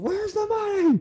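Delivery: put-on very high, loud, shrill, piercing scream. Retelling a couple's argument, acting out the man's scream. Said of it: "he kind of screams".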